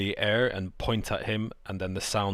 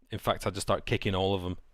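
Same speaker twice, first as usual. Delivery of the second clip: ordinary talk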